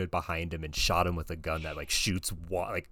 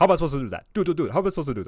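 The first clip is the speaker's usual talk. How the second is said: put-on very high, shrill, awful French Canadian accent; 10 semitones higher, 8 dB louder than usual. Retelling what a driver said after letting go of the wheel, worst French Canadian accent. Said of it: "Like the worst French Canadian accent".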